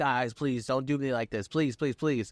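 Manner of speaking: mock, desperate, pleading begging. Retelling a wrestling segment where Solo begs his opponents: imitating someone begging. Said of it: "Solo's begging, like".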